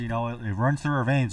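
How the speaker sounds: plain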